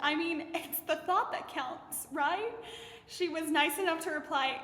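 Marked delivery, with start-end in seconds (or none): 0.0-2.5 mock clumsy, awkward, uncomfortable joking delivery. Retelling a chat with a woman, replaying own past line: retelling an uncomfortable joke. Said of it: "So I uncomfortably joked".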